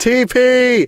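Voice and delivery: mock very high yelling shout. Imagining being stranded at a gas station, acting out yelling. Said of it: "I start yelling".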